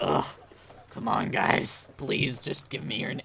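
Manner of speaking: mock worn-out, creaky, raspy, dragging man's voice. Imitating a baby-faced young man with a rough voice, weary and pleading. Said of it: "he just speaks like this".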